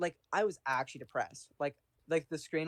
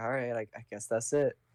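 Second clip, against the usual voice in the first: mock-defeated, flat, resigned, lifeless delivery; 4 semitones lower than usual. Retelling giving up at a video game, the speaker acts out their defeated tone.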